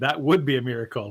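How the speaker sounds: plain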